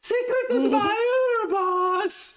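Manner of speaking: very high, squeaky, dopey voice, "boss" drawn out. Narrating a game, the speaker voices the player's bodyguard handing over a note, dumb voice. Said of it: "I'm gonna give this guy a dumb accent or a dumb voice".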